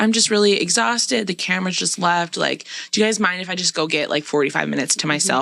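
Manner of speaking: normal talking voice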